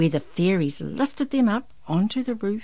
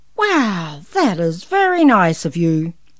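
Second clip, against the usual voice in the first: very loud, booming, slow, big kind-hearted voice; 8 dB louder than usual. Santa answers Darren, who stayed awake to thank him, kindly. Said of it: "Santa said kindly".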